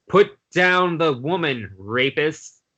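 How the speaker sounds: machine-like, mechanical robot voice. Narrating a game scene where a giant green robot addresses the players: mechanical robot voice. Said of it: "you hear a mechanical voice saying".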